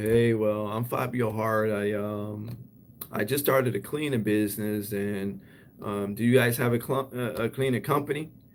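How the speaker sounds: unengaging, halting delivery with dull, hesitant pitch. Showing how introducing a new cleaning business sounds: unengaging delivery. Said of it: "It doesn't sound that engaging".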